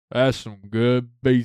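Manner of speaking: put-on speech as if mouth full of food. Retelling what a man at the pizza box said, imitating talking with mouth full. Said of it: "with his mouth full".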